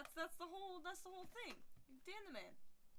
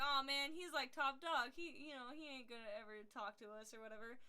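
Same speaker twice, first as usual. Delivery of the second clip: ordinary talk, nothing marked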